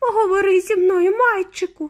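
pleading, begging, pitched very high. In a story, a mother calls to her shrunken son, begging. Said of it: "благала пані Тіві".

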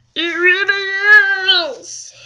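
silly, very high, loud, stretched squeal. Showing a hot pink product to the camera, in a weird voice. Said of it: "that's my weird voice".

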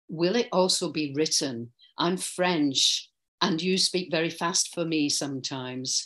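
ordinary talk

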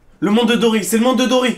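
high, loud shout at the top of the lungs. During an argument, the speaker answers the other, shouting. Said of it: "arrête de crier là".

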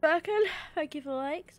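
soft words spoken through a yawn mid-sentence. The speaker thanks Birkin for the like in the middle of a yawn: yawning. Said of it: "I'm yawning at you".

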